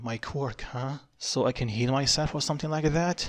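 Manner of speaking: ordinary delivery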